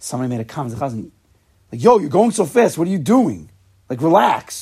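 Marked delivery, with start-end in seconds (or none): 1.8-4.6 angry, raised voice, mock anger. Retelling somebody's remark to the chazan during prayers: mock-angry complaint. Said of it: "in an angry way".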